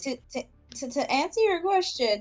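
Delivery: whispered, breathy stutter repeating "to". Starting to answer someone's question, stuttering. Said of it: "Now that I'm stuttering".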